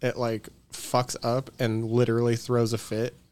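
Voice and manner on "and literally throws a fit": normal talking voice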